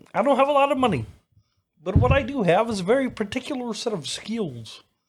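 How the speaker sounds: very high, loud cartoon frog puppet voice. Quoting the Taken phone call as Kermit the Frog: Kermit the Frog voice. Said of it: "Kermit the Frog doing the Taken phone call".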